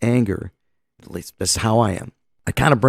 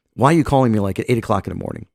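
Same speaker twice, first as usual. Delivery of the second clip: ordinary talk, nothing marked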